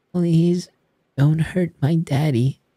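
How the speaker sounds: put-on tiny, trembling child's voice, very high and small. A small, shivering girl wrapped in the narrator's jacket pleads, in a small shaking voice. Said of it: "Her little voice shook past chattering teeth".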